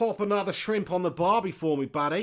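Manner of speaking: weak put-on Australian accent. Speaker attempts an accent and admits it isn't their best, bad australian accent. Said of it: "It's not my best accent".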